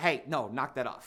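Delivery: mock commanding tone, soft and firm. Retelling putting their foot down while arguing with a girlfriend: imitating a commanding voice. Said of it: "knock that off in that commanding voice".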